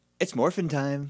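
put-on dry, snide, snarky, passive-aggressive tone. Recapping a favorite episode moment, the speaker quotes her line, imitating her snarky tone. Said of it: "But she's even snark".

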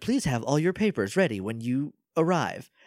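automated computer announcement voice. Recounting a scene, doing the announcement of a computer voice. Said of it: "there's like a computer voice".

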